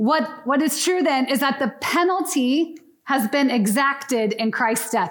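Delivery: formal, lawyerly, courtroom-style delivery. Addressing the group, the speaker delivers a fancy sentence in a formal lawyerly tone. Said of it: "Did I sound like a lawyer right there?".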